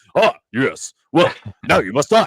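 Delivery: put-on old kung fu film dubbed voice. Describing a film's dubbing, imitating a dubbed chinese martial arts film line. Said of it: "like a Chinese martial arts film".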